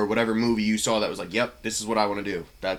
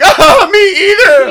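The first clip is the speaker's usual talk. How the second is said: shrill, very loud, high-pitched laughing along; 19 dB louder than usual. Explaining why someone laughed about having no dad: imitating laughing along. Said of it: "It's laughing like".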